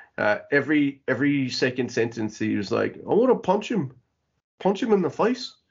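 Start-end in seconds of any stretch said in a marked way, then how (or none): 3.1-5.5 high-pitched, bad New Zealand accent. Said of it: "That was my bad Kiwi accent".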